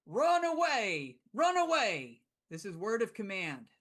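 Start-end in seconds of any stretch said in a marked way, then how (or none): 0.2-2.3 acted, high, swooping, drawn-out shout. Voicing a cleric commanding charging orcs: in-character shout. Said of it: "I'm shouting".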